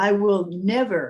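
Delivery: plain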